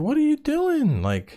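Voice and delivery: mock-outraged dad voice, high offended whine.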